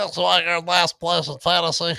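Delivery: high, play-acted, snide, taunting echo voice. Repeating another speaker's last-place jab back at him: mocking imitation voice. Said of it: "he just has to do the mocking voice".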